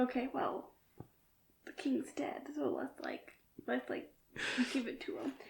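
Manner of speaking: muttered under the breath. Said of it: "under their breath".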